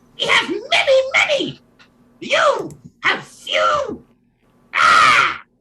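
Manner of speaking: very high, loud, squeaky little gremlin voice. Storyteller voicing the gremlin answering the party in a game scene, gremlin voice. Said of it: "The gremlin says".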